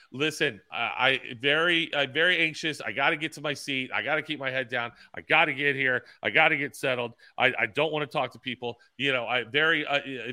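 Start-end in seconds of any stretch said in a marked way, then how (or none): none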